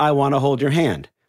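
normal talking voice

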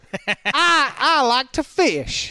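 put-on Southern accent, very high, very slow. Suggesting what an exotic American accent sounds like: put-on Southern American accent. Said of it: "an exotic American accent would be like a Southern accent".

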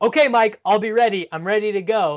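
enthusiastic yell. Retelling a documentary moment: imitating Steve Kerr yelling. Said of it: "you literally hear Kerr yelling".

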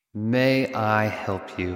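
very polite, exaggerated courteous tone. Host recalling the name of a listener-questions series, very polite tone. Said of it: "You have to say it just like that, in that tone".

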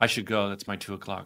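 hushed, low, quiet, flat deadpan. Retelling a scene where she answers a shouting man, imitating her deadpan reply. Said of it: "she totally deadpan goes".

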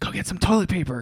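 hushed whisper. Retelling a night spider hunt while a kid sleeps nearby, speaker quotes her, whispering. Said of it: "Why are we whispering?".

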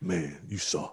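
deep, soft, quiet, low mumble. Retelling a conversation about crying, in a Shaq low mumble. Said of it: "it's like that low mumble".

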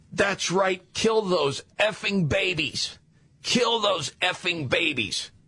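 put-on crazed, unhinged, high-pitched screaming. Retelling what a protester screamed at pro-life people: imitating someone screaming. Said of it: "this woman was screaming".

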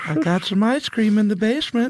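pushed-up whistling put-on voice. Trading impressions of a character everyone enjoys doing: Herbert impression. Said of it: "a voice that we can all enjoy doing".

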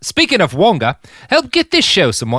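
loud Australian accent with swooping tune. Plugging Wonga for the show, slipping into an Australian accent. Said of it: "I went Australian right away".

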